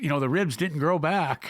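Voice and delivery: ordinary talk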